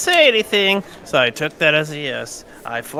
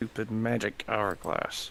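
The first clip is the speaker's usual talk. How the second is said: very soft words spoken through clenched teeth; 7 semitones lower, 14 dB quieter than usual. Answering a question in character: said through gritted teeth. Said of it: "Say through gritted teeth".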